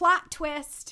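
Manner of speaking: sudden, very loud, high, blurted yell. Suddenly remembering a saying mid-explanation and yelling it out. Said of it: "Sorry, I didn't mean to yell that".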